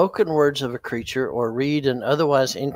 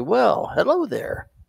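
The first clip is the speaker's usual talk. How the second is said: put-on screen-hero voice, pitched up with a rough edge; 7 semitones higher than usual. The speaker mosies up to a towering figure to greet it, Obi-Wan Kenobi voice. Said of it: "in my best Obi Wan Kenobi voice".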